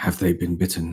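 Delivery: breathy, hushed half-whisper, leaned in close. Voicing a character leaning in to a doctor: half-whispering in character. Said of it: "he's gonna whisper the words".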